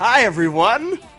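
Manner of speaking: very loud, high, eager and enthusiastic voice. Greeting listeners at the start of the episode: enthusiastic greeting. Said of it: "I wanted to be a little more enthusiastic this week".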